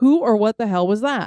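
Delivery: ordinary talk, nothing marked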